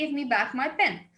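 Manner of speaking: ordinary talk, nothing marked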